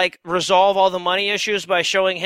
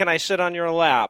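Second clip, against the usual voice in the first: normal talking voice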